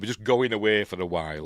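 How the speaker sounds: usual speaking voice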